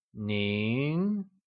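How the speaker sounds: nin with mid-rising second tone. Teaching the formal you, repeating it with mid-rising second tone on nin. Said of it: "It is said with a mid-rising tone, also known as the second tone".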